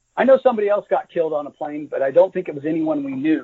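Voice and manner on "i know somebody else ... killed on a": ordinary delivery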